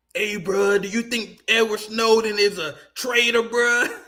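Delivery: mocking put-on surfer bro voice. Mocking a neocon surfer bro who questioned him, in a surfer bro voice. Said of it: "This fucking neocon surfer bro dude".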